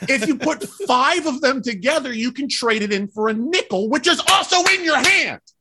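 worked up. Telling a story about a man tossing away his change, worked up. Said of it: "I'm getting worked up".

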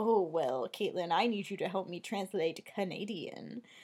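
weirdly flirty voice. Retelling how Kevin Smith spoke to Caitlin: imitating Kevin Smith weirdly flirting. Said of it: "weirdly flirting".

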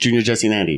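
rushed rapid delivery. Showing how the names could be zoomed through: zooming through fast. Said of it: "I wanted to zoom through that so fast".

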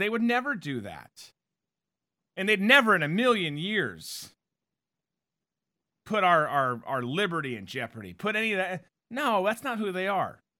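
tongue-in-cheek, sarcastic, facetious fake sincerity. Talking about Democrats and natural resources, speaking facetiously. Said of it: "I'm being completely facetious".

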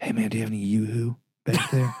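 fast, quick, hushed half-whisper. Going to the bar and quickly asking Twitter something: half-whispering. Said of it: "I whisper to Twitter real fast".

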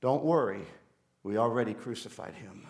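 put-on very low, quiet, calm, unruffled voice. Telling a joke, acting out a voice from the back of an elevator: retelling a calm voice. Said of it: "calm voice".

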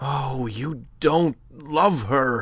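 passionate, emotional crying out. A narrator reads one man's outburst to another, in a passionate cry. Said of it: "cried the other passionately".

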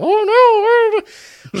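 very high, swooping, drawn-out exclamation, each oh stretched. Retelling a wrestler's bit as a mop: Mister Bill voice. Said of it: "commit to doing the".

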